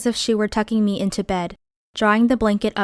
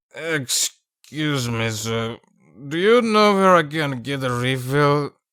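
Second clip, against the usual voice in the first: put-on very low, drunk-sounding voice; 7 semitones lower than usual. Narrator voices an intruder interrupting men attacking the narrator, drunken voice. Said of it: "a drunken voice said".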